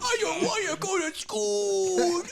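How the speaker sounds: put-on goofy nasal voice. Imitating a friend's kids who sound like Adam Sandler. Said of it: "they sound just like Adam Sandler".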